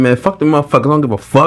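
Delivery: high, blunt, careless, no-nonsense tone. Imitating a coworker's expected reaction to a wrong fixture: imitating the foreman's blunt talk. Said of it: "that's exactly how he would talk".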